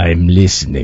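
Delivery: put-on Russian accent. Showing how Russians answer the telephone: Russian accent. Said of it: "say it in your best Russian accent".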